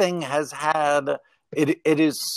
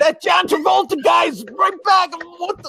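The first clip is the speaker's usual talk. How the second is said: put-on heavy Boston accent at a very high pitch; 4 dB louder than usual. Retelling a man on Boston radio complaining about a film told out of sequence, thick Boston accent. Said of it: "in a thick Boston accent".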